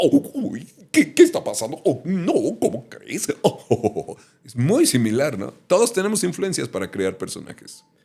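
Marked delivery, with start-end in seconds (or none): 0.0-4.2 very high, loud, swooping squeal in a cartoon voice. Demonstrating the voice he uses for a cartoon character: Goofy voice. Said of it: "lo uso mucho para Goofy".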